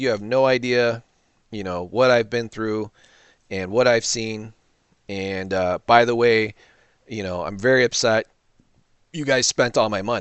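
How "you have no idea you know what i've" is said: ordinary delivery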